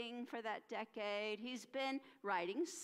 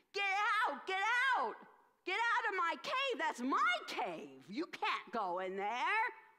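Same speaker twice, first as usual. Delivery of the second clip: furious, loud, high-pitched angry shouting; 7 semitones higher, 5 dB louder than usual. Acting out a man ordering demons out of his cave: angry. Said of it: "angry to see them there".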